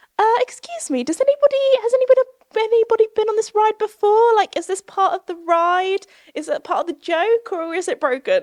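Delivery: very high-pitched, posh, frightened voice. Stuck on a ride, speaker retells asking other riders, in posh scared voice. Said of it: "me in my very like posh, scared voice just went".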